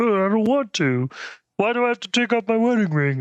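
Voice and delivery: bad, high-pitched cartoon dad voice. Retelling a Simpsons scene where Homer objects to removing his ring, bad Homer Simpson impression. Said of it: "That's a terrible Homer".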